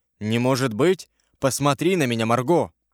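ordinary delivery, nothing marked

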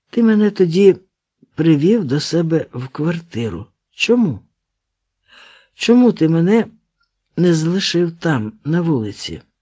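plain

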